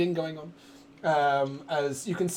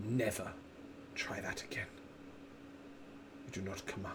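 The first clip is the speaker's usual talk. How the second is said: different, dangerous dragon voice, whispered and menacing; 9 semitones lower, 17 dB quieter than usual. Narrator voicing a dragon speaking straight to you, in a different dragon voice. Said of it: "in a sort of different voice".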